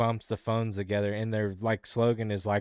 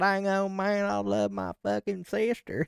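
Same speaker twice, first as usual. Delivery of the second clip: very high, slow, fake backwoods southern drawl; 11 semitones higher than usual. Mocking how non-southerners fake a southern accent: mock trashy southern accent. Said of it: "just backwards fucking meth cooking trash fucking accent".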